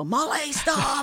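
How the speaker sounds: high, slow yell with a laugh.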